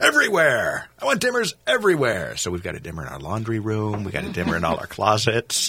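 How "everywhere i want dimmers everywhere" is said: put-on very high, loud, swooping shriek. Speaker retells their answer to an electrician, retelling a scream. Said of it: "I screamed".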